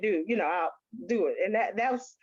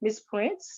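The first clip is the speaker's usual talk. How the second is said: put-on very calm voice; 4 dB quieter than usual. Retelling a doctor giving serious news: imitating a very calm voice. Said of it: "in the most calm voice".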